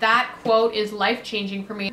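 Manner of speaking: plain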